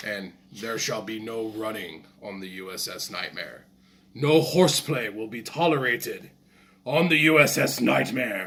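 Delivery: deep, dark satanic announcer voice. Describing the voice over the intercom on the USS Nightmare, deep, dark satanic voice. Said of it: "this deep, dark, satanic style voice".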